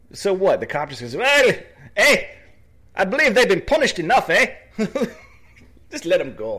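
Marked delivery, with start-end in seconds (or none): 1.1-6.6 over-the-top put-on Canadian accent, loud and high. Retelling what a cop said, in an exaggerated Canadian accent. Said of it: "Is that really how Canadians sound to you?".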